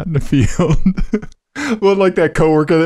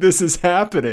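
imitated scream; 2 semitones higher, 3 dB quieter than usual. Retelling own screaming in a parking lot: imitating own past scream.

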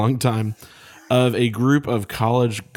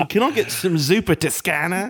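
put-on Australian-accented voice; 9 semitones higher than usual. Saying italian dishes on a podcast, in an australian accent. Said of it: "an Australian accent".

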